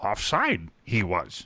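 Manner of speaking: low-pitched, swooping character voice. Mocking broadcasters' backwards phrasing in a Yoda voice. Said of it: "just do the Yoda voice".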